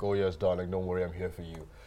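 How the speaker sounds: soft, low, gentle, doting and tender voice. Explaining the kind of partner the speaker likes: imitating a gentle kind of guy. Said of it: "the gentle kind of guy that will be like".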